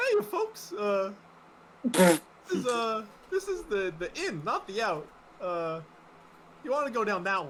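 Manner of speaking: dopey, slow-witted voice, stumbling and fumbling words. A game master voices a guard redirecting players at a gate, Huey the dopey guard voice. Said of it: "I get to use my favorite character voice".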